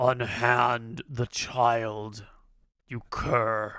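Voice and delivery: deep voice, brought right down low. Narrating a guard with his sword drawn confronting someone holding a child, in a low voice. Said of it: "the guard says in a low voice".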